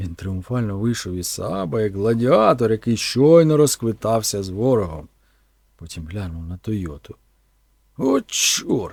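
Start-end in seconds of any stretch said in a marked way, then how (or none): 8.0-8.9 very high-pitched, annoyed, irritated muttering. A man steps out of his car and glances at a Toyota, irritated mutter. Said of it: "пробормотав він роздратовано".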